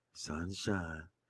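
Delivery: put-on impersonation voice, very low and soft. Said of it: "let me try to sound like Chris Pratt".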